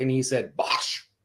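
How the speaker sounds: plain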